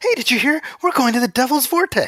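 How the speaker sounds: thrilled, eager, excited, very high voice. Retelling a movie character's line about the Devil's Vortex: imitating an excited character. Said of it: "he's so excited".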